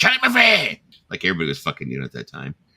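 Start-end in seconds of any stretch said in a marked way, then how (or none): 0.0-0.8 put-on very high, shrill, drunken heckling shout. Retelling how his date yelled from the crowd mid-story: a loud tipsy shout. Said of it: "to be loud and".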